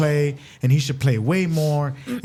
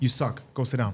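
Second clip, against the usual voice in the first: blunt, cutting, harsh and dismissive tone; 2 semitones lower, 6 dB quieter than usual. Retelling what a baseball coach said to a pitcher: imitating a harsh coach. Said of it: "is that harsh?".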